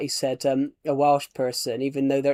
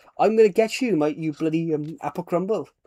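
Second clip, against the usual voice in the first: put-on Welsh accent; 3 semitones higher than usual. Speaker retells a clip of a Welshman insulting somebody, in a Welsh accent. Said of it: "I love the Welsh accent".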